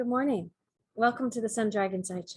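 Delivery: calming, soothing tone. Co-host opening the Monday morning show, greeting listeners in a best soothing voice. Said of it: "best soothing voice".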